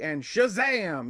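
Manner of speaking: Shazam exclaimed, drawn out slow and pitch-swept.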